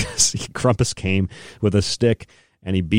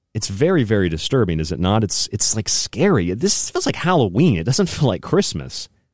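plain

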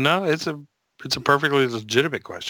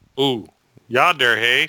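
very poor, fake Canadian accent; 4 dB louder than usual. Co-hosts joking about bands from Winnipeg, in a very poor Canadian accent. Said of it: "that's very poor Canadian accent".

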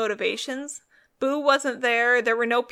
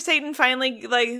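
normal talking voice

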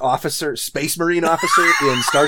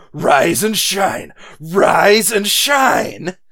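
very slow, unhinged, every word stretched out; 4 semitones higher than usual. Retelling a movie scene on an ice floe, imitating Jack Lemmon going nuts. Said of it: "hear Jack Lemmon just go nuts and go".

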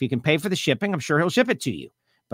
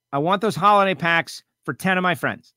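plain

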